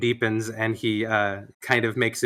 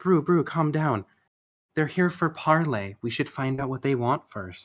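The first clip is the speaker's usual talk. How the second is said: put-on worried sympathy, feigned and placating; 4 semitones higher than usual. A lady elf calms an angry male elf before a parley: feigned concern. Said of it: "lady elf steps in and kind of feigns uh, like concern".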